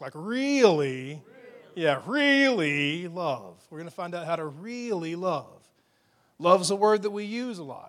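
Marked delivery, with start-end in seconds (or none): 0.1-1.2 lightly mocking, slightly sarcastic tone. Speaker showing the audience how to say the word: a little sarcastic. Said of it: "you got to say it like that, a little sarcastic".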